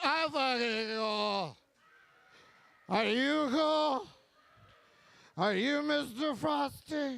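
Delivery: put-on drunken voice. Retelling how a friend who was too drunk to drive answered: imitating a drunk friend. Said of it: "And they're always like".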